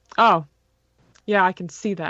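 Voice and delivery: mock-arrogant sarcasm. Retelling a man's answer to a radio message during a race, mock-arrogant and sarcastic. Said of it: "arrogant and sarcastic".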